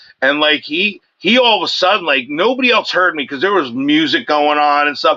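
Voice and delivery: ordinary talk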